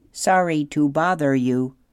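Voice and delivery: as friendly as possible. Narrator reads the robot pulling the gosling back outside, in her friendliest voice. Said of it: "Roz would say in her friendliest voice".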